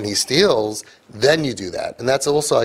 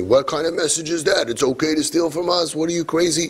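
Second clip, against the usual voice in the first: put-on angry tone; 4 semitones higher than usual. Acting out how the therapy world would react to the speaker's advice, mock-angry therapist voice. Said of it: "That's my therapy voice".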